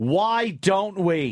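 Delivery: high, loud yelled outburst shouted out. Talking with the others in the room, yelling. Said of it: "Why are you yelling?".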